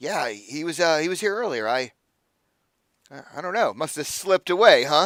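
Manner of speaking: self-satisfied tone. Voicing a bartender answering a question about the eel: bartender pleased with himself. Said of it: "he's obviously very pleased with himself".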